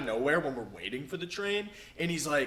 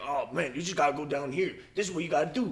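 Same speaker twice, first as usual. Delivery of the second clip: put-on New York accent. Retelling what a man on the train said, in a new york accent. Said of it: "So he's like doing that".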